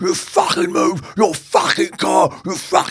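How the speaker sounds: put-on, very high, shrill, furious raging scream. Retelling a driver screaming at the speaker: imitating someone screaming angrily.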